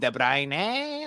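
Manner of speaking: put-on screaming football commentator voice. Retelling the commentator calling the name as a player picks up the ball: imitating a commentator screaming. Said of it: "he's screaming".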